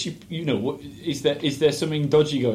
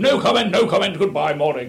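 put-on snooty voice, higher in pitch and louder; 6 semitones higher, 5 dB louder than usual. Retelling what a curt man said coming out of his house, in a Lord Snooty voice. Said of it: "Lord Snooty voice".

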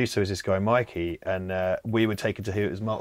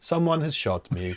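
mock German-accented voice, calm and higher; 6 semitones higher than usual. Retelling a clip of being shot with an air rifle: very calm Werner Herzog impression. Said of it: "He's like".

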